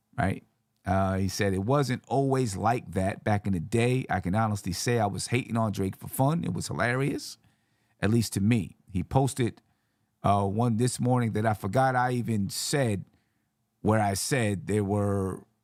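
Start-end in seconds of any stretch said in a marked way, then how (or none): none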